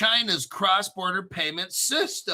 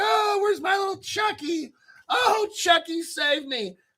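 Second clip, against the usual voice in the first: very high, put-on frightened voice, fake scared; 12 semitones higher than usual. Acting pretend scared and calling for help: pretend scared voice. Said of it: "gotta act scared".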